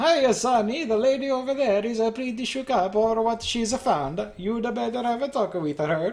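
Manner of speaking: put-on generic Italian accent. Reading Officer Gillespie's dialogue aloud; generic Italian accent. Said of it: "He's a generic Italian man".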